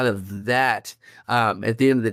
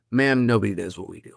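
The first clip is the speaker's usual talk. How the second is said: mock self-assured, calm, certain, confident tone; 2 semitones lower than usual. Retelling own answer to the vice principal: retelling a confident reply. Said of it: "with the most confidence I could say".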